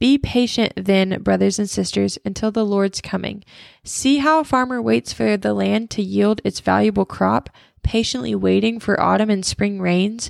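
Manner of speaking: normal talking voice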